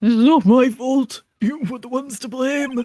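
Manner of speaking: put-on elderly old man character voice. A witness ordered out of the courtroom protests, in an old man voice. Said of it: "Good old man voice".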